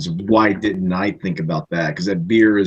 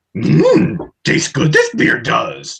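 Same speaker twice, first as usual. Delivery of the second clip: rough, creaky put-on voice; 8 semitones higher, 4 dB louder than usual. Answering which impression is done, tasting a beer: Yoda voice. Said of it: "I do Yoda".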